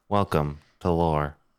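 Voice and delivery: flat, joyless monotone with no inflection. Complaining about a podcast narrator, the speaker imitates the Lore host's monotone voice. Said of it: "He speaks in this voice the entire time".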